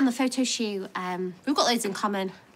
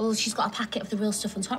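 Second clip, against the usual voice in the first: plain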